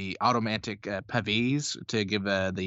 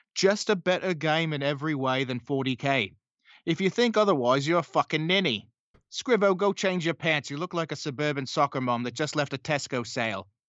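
put-on slight Australian accent, pitched up; 5 semitones higher than usual. Quoting what a wargamer probably once said: imitating Rob with an Australian accent. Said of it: "Got a bit Australian there".

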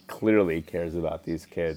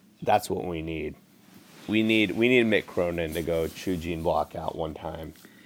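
usual speaking voice

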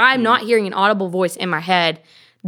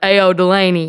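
put-on booming voice, louder; 4 dB louder than usual. Joking about how people imagine hearing God: imitating God shouting through a microphone. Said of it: "God either shouts in your head with a microphone".

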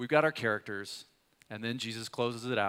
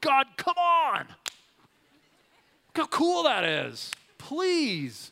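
very high, drawn-out, swooping pleading scream; 7 dB louder than usual. Retelling what they do while driving past a property: retelling screaming while driving. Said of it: "I just start screaming".

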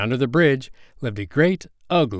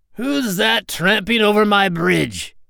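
menacing, very high, roaring troll voice; 9 semitones higher than usual. Reading the billy goats Gruff story, the narrator voices the troll under the bridge: roaring troll voice. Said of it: "and under the bridge lived a great ugly troll with eyes as big as saucers and a nose as long as a".

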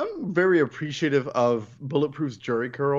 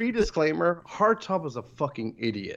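ordinary talk, nothing marked

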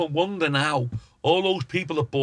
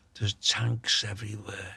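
soft, hushed half-whisper under the breath; 6 semitones lower, 7 dB quieter than usual. Retelling a friend's phone call at night: imitating George half-whispering. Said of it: "he's whispering down the phone".

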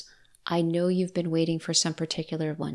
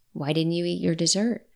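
playful mock-serious tone. Retelling what she said to him, in a playful mock-serious tone. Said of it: "playful to be light in a serious tone".

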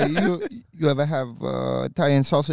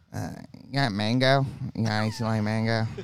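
put-on drunk voice, lower and quieter; 4 semitones lower, 6 dB quieter than usual. Acting out Sean ordering a drink while drunk: imitating drunk Sean. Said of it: "What's he order?".

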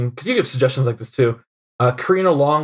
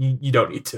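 quieter, flat deadpan delivery; 5 dB quieter than usual. Retelling what a mutual friend said to the speaker; retelling a deadpan line. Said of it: "just very deadpan".

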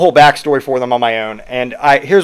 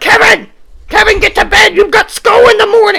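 very high, shrill, raised nagging voice; 5 dB louder than usual. Imagining a gamer's mom sending him to bed, imitating Kevin's mom. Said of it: "Kevin's mom was probably like".

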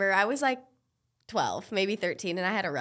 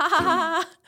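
high, loud fake ha ha ha. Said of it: "And I'm like".

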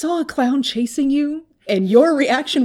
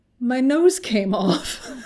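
ordinary talk, nothing marked

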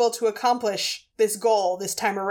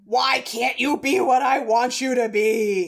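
exasperated, frustrated half-shout, mildly raised. Retelling a character yelling at her transforming weapon: imitating a yell. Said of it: "and she yells at it".

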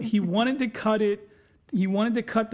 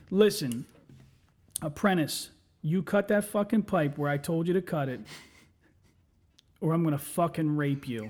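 mock stern, low, dead-serious, no-laughing menacing tone; 4 semitones lower than usual. Retelling how a coworker threatened an apprentice: imitating a straight-faced threat. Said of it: "I gotta say it with a straight face".

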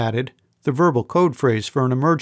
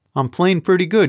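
quick, snappy delivery, much higher pitch; 5 semitones higher than usual. A woman answers a young man who calls her good for a girl: retorting. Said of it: "she retorted".

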